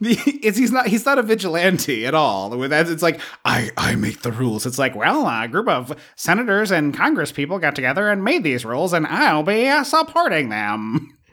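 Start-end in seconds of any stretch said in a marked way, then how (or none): 4.9-11.1 put-on old-timey 1920s accent. Discussing a character's attitude to the law, voicing him in a 1920s old-timey voice. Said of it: "I like your 1920s voice".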